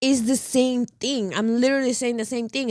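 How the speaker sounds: ordinary delivery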